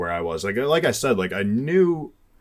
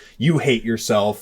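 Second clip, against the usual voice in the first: acted screaming. Retelling a confrontation at a car, imitating someone screaming. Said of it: "screaming in his face".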